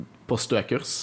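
ordinary talk

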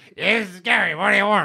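high, creaky, reptilian lizard-like voice. Player shows how a character talked before becoming a lizard man: lizard-like voice. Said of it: "Did anyone tell you sound like a lizard?".

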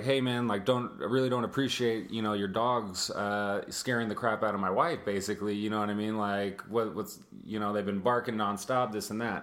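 normal talking voice

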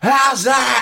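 very high, shrill, loud shout. Retelling catching a nine-year-old out at garden cricket: imitating own shouting. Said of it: "I'm like this".

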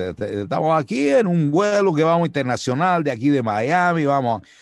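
mock Cuban-accented Spanish. Showing how a cuban airline announcer would sound: imitating a cuban accent. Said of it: "No hablaba como cubano, que hablaban así".

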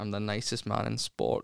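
slow, put-on sad-sounding voice. Speaker plays Andy Murray describing himself: slow, mock-sad Andy Murray impression. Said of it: "i speak very slowly and i sound a bit sad".

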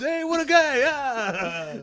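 very high, very slow, long stretched "ah", comic. Riffing on doing a comedy set in character: Rodney Dangerfield impression. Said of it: "I gotta watch more Rodney Dangerfield".

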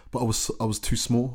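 normal talking voice

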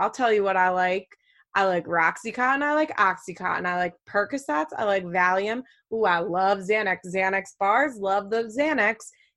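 ordinary talk

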